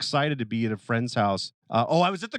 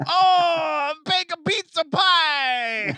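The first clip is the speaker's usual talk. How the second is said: high, drawn-out put-on Italian accent; 4 dB louder than usual. Retelling a comedian's stand-up bit, the speaker does a put-on italian accent. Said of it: "only accent you can do now without getting canceled is uh, Italian".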